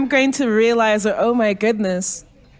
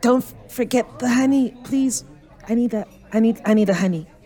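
hushed whispered aside, stumbling and tripping over words. Playing a character asking not to forget the honey: whispering. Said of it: "And I'm gonna whisper".

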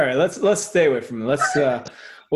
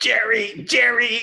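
very high, shrill sitcom-style holler; 9 semitones higher than usual. Doing an impression while joking about famous Georges: George Costanza impression. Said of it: "George Costanza impression".

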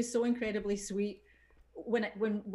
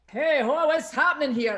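all-in, loud, high big performance voice; 5 semitones higher, 10 dB louder than usual. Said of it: "I was totally full on".

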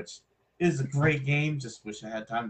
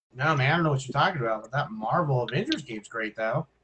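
fast, very sarcastic delivery. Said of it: "I was being very sarcastic about that".

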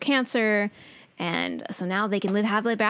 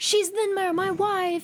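mock very high-pitched, drawn-out, panicky freaked-out cry; 11 semitones higher than usual. Retelling a scene where Max shows up: imitating someone freaking out. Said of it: "he's all freaking out".

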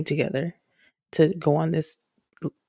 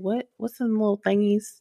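put-on grandma-like voice, higher; 5 semitones higher than usual. Retelling own confusion over a forgotten toy name: sounding like somebody's grandma. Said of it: "I sound like somebody's grandma".

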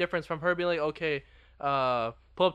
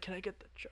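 cracking, breaking, breathy voice barely above whisper; 3 semitones higher, 16 dB quieter than usual. Retelling pulling up to order food, re-enacting their voice breaking. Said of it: "my voice breaks out while I say it".

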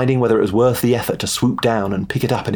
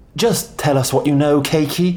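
soothing, reassuring, a little higher; 5 semitones higher than usual. The narrator speaks to Cakey, a man in anguish; soothing. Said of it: "I said soothingly".

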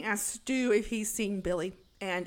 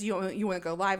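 plain

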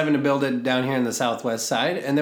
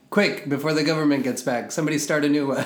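normal talking voice

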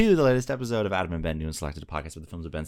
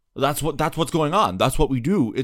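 put-on actor voice, about to explode, higher, louder; 8 semitones higher, 6 dB louder than usual. Imitating an actor who always seems about to explode: Adam Driver impression. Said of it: "he'll always be like".

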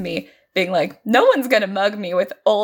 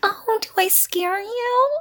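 mocking baby talk, very high, slow, drawn-out, taunting; 12 semitones higher than usual. Retelling a woman getting in someone's face: imitating a mocking baby voice. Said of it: "with, like, a baby voice being like".

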